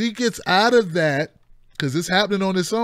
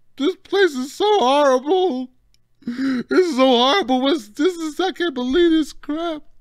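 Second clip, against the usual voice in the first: put-on tearful, ranting voice, higher pitch; 8 semitones higher than usual. Retelling their own tearful reaction to hard news: imitating welling up with tears. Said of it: "I start welling up and start".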